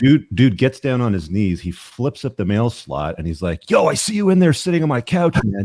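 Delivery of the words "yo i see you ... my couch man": put-on panicked outburst, very high-pitched and frantic. Retelling a stranger at the mail slot, the speaker imitates a guy freaking out. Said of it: "just like freaking out".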